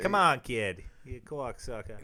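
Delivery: loud put-on Boston accent, slipping into Australian. Imitating a loudmouth Boston coach: loudmouth Boston guy voice. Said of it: "That's a little Australian".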